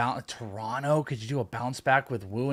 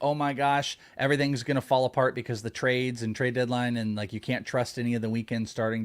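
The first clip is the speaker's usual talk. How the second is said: ordinary talk, nothing marked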